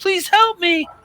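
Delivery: shrill, very high, pleading scream. Voicing a hostage held at knifepoint, screaming: screaming hostage plea. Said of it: "she screams".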